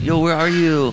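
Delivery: high-pitched calling out. Naming players one by one and doing a Miguel Ibarra impression. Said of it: "That's my Miguel Ibarra impression".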